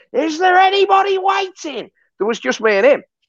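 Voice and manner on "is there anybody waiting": very high, long, drawn-out hollered shout. Retelling a McDonald's worker calling out in the early hours: imitating someone shouting. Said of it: "he kept shouting".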